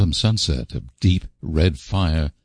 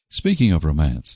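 plain

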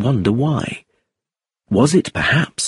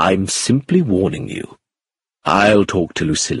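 usual speaking voice

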